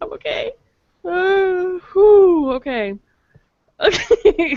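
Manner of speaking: crying with laughter. After failing to hold in laughter, the speaker settles down, crying with laughter. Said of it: "I'm crying".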